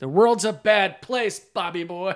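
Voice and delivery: loud, aggressive yet joyful, gleeful menace. Quoting a favorite movie line: imitating Ronnie, aggressive but joyful. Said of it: "It's weird 'cause it's aggressive, but also joyful".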